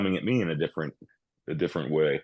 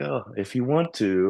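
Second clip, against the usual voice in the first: put-on, pitched-up feminine voice; 6 semitones higher than usual. Retelling how a partner answers in bed: imitating a real feminine tone. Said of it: "she's real feminine, like".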